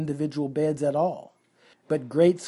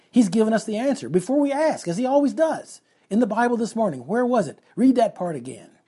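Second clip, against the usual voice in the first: eager, excited, high, swooping voice; 6 semitones higher, 3 dB louder than usual. [name] speaking to Corey, excited. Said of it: "she said excitedly".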